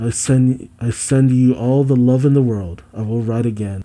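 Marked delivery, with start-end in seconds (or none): none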